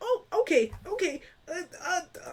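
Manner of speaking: mock, very high, flustered burst of alarm. Voicing a character who drops off a ledge and vanishes: alarmed. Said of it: "like he's making a noise of alarm".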